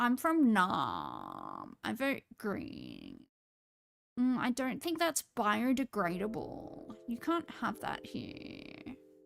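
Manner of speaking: creaky vocal fry. Doing a comedy bit as a hipster, in hipster vocal fry. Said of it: "This is the hipster vocal fry".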